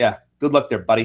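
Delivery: put-on fast, tossed-off Canadian accent. Recapping a wrestling backstage segment, quoting Kevin Owens in a Canadian accent. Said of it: "Like in his best Canadian accent".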